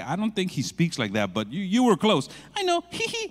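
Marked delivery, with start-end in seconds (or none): none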